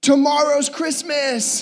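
put-on tiny kid's Brooklyn accent, shouted out. Father retelling what his three-year-old daughter shouted on the drive home, retelling a shout in a little brooklyn accent. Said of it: "shouted it out in this little like Brooklyn accent".

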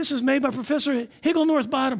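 high-pitched, excited exclaiming. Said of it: "And he's so excited".

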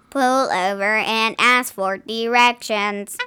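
mechanical robotic voice. Telling a joke, voicing what the lost GPS tells the driver, robot voice. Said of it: "I got to work on my robot voice".

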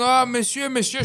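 high-pitched screaming. Telling how a man hit a lady with his bicycle, retelling her screaming. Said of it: "she's screaming".

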